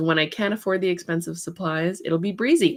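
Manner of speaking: ordinary talk, nothing marked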